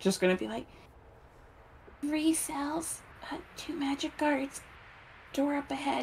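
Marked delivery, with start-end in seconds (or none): 2.0-6.0 very quiet whisper, higher and quieter. Voicing Nyx reporting cells and guards in secret: whispering as quietly as possible. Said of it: "Nyx is gonna whisper, like, as quietly as possible".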